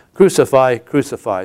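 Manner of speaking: usual speaking voice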